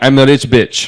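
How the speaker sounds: imitated heavy Russian accent. Retelling what a woman they met said about herself, in a strong Russian accent. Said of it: "very strong Russian accent".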